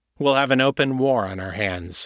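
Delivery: ordinary delivery, nothing marked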